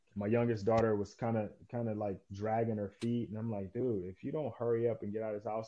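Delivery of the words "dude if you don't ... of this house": put-on, mock raised voice. Retelling rushing the daughters out of the house: imitating own raised voice. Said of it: "I raised my voice".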